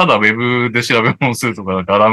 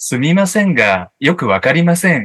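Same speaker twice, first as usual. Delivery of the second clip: put-on phone voice-assistant voice; 4 semitones higher than usual. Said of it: "シリの声真似をしながら答える".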